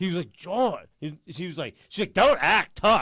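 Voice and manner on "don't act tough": screaming, very loud scolding yell. Retelling a friend's girlfriend screaming at him on the phone; imitating her yelling. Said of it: "you have to scream on him like that".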